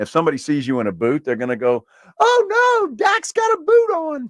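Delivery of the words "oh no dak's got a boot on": put-on very high, very slow, little girly voice. Describing how people would react to seeing Dak in a boot: little girly voice. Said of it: "You get your little girly voice".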